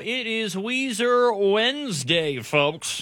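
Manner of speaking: cheesy radio DJ voice. Radio host announcing Weezer Wednesday to listeners, in a hacky radio voice. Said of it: "I can't help but go into my hacky radio voice".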